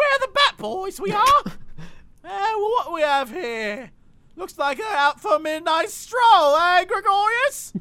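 very loud, very high, hammy British gangster voice. Describing a figure holding a bat, then voicing him: cheesy british gang voice. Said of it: "one of those cheesy, like, British gangs".

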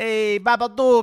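put-on New Jersey accent. Repeating a movie title as a joke: New Jersey accent. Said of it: "Why do you say it like New Jersey?".

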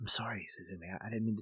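mock soft near-whisper. Describing a character's voice, quoting how he apologizes when she yells, imitating a soft whisper. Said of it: "almost like a soft whisper".

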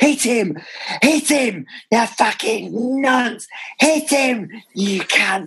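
put-on, shrill, very high, bellowing yell. Recalling a fan in the stadium's south stand, the speaker is retelling a fan's shout. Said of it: "He'd always shout like".

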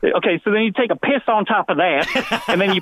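worst possible put-on Southern accent. Retelling what a man told the speaker about selling drugs, in a bad southern accent. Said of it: "He's in like the worst Southern accent".

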